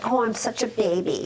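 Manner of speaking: ordinary delivery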